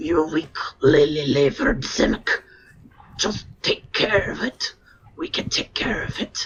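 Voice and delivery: rough, gruff, deep, low dwarf voice. Telling the players what they hear, in a gruff, low dwarven voice. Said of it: "a gruff, low dwarven voice".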